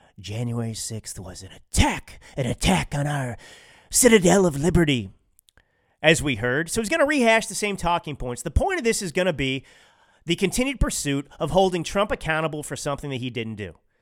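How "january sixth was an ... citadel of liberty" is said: lower put-on whisper into a microphone. Imitating Joe Biden leaning into the microphone: whispering Joe Biden impression. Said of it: "Maybe he'll whisper into the microphone like this".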